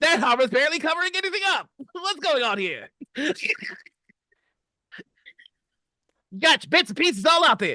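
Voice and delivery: put-on very high-pitched old-timey vintage radio announcer voice. Describing a game character to friends, imitating Peller's old-timey radio host voice. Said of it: "He talks like an old timey radio host".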